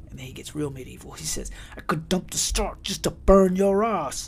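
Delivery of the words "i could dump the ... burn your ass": put-on raised, high outburst in English accent. Quoting a man threatening the speaker, in a put-on English accent. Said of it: "that's why I had that accent to me".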